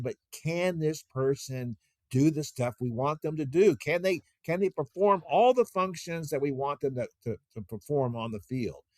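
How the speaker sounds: normal talking voice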